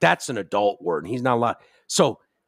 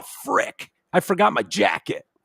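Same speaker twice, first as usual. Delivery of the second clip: put-on pitched-up, dorky nine-year-old voice acting tough; 8 semitones higher than usual. Mocking a nine-year-old who thinks he's hardcore: imitating Marshall acting tough. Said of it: "how a nine-year-old displays that they're".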